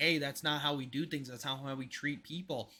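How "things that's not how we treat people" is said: ordinary talk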